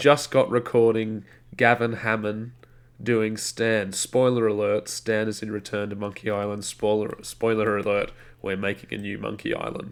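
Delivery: ordinary delivery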